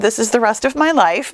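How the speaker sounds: ordinary talk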